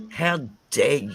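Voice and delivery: getting angry. Speaker reacts to someone ignoring the lifelong effect on a person, angry. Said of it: "I just get so angry with these things".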